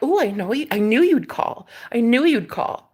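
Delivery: put-on condescending, patronizing, superior tone. Retelling what a man said on the phone: imitating a condescending tone. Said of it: "so condescending".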